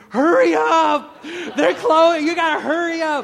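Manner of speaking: very high, very loud, urgent screaming. Speaker recounting finishing a marathon as a man yelled, imitating a man screaming. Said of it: "this guy is screaming".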